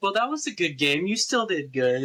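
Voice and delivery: play-acted kind, gracious, good-sport tone. Retelling own words to a losing opponent: imitating own nice sportsmanlike tone. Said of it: "I'm all nice".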